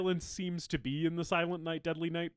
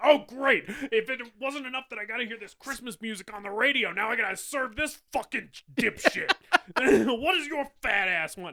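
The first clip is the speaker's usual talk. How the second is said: loud, pitched-up, mouthy, rude, griping voice; 6 semitones higher, 5 dB louder than usual. Retelling a story where Santa walks into a convenience store, imitating a rude cashier. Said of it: "He's like being really rude".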